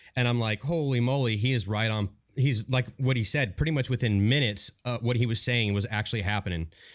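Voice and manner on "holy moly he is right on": normal talking voice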